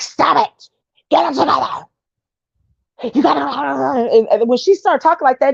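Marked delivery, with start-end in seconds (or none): 0.0-4.1 mock demonic throat voice, higher. Imitating how a woman scolds people: imitating her demon-like voice. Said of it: "it just sound like a demon coming out her throat".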